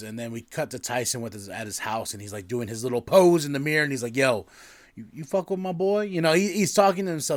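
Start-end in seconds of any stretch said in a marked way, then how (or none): 4.2-6.0 tough-sounding gangster voice. Retelling a scene where Tyson poses in the mirror: imitating Tyson talking gangster. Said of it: "talking all gang-".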